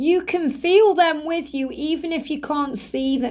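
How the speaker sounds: ordinary talk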